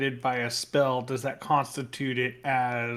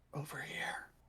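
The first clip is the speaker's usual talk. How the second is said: hushed, very quiet, whispered call; 17 dB quieter than usual. Calling the others over to a door in the dark: whispering. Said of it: "I will whisper to the others".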